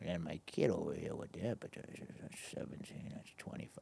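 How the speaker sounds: low quiet mumble. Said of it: "he would mumble your numbers".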